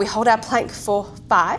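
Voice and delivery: normal talking voice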